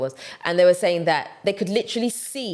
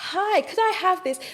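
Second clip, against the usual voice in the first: very high-pitched posh British queen's English accent; 13 semitones higher than usual. Showing listeners how to ask for something when they go abroad, in a Queen's English accent. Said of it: "Use the Queen's English and speak it for them".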